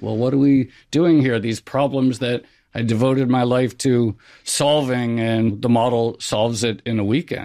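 ordinary talk

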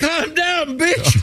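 high, soft shriek.

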